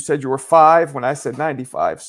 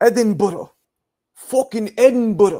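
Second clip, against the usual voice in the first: put-on, combative Scottish accent, pitched up; 7 semitones higher than usual. Attempting a scottish accent for scottish listeners, aggressive scottish accent. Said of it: "I'm getting aggressive because I feel like that's how you guys talk".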